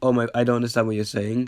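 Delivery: ordinary talk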